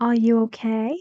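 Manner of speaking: pitch climbing upward on okay. Lesson on sentence-end intonation, asking a question with rising pitch on okay. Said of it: "A rising intonation".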